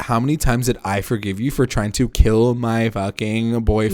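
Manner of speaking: ordinary delivery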